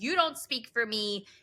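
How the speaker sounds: ordinary talk, nothing marked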